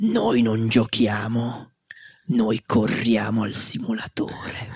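deep, menacing villain voice. Retelling a reply from sim racers on Discord, in a Darth Vader voice. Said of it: "una vocina tipo Darth Vener".

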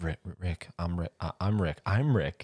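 put-on stammering voice. Joining in on how the character stutters his name: imitating Rick stuttering. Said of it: "when he stutters".

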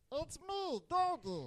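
very high animal character voice. Trying to recall an animal character, speaking as it in a put-on animal character voice. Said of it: "He sounds like a cross between Jar Jar Binks".

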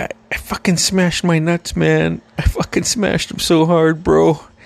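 acted near-crying, mock-tearful voice. Retelling what an injured man told him right after it happened, imitating someone almost in tears. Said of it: "he's like almost in tears".

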